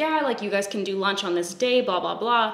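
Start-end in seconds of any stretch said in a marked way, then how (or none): none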